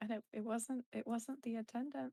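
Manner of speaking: speaking quietly in a soft voice. Voicing a character telling a companion what happened: speaking quietly. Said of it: "just quietly goes".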